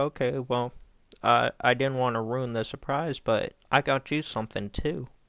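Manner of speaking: ordinary talk, nothing marked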